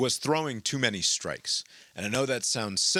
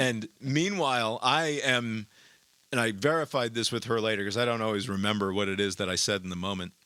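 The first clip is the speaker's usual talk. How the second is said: ordinary talk, nothing marked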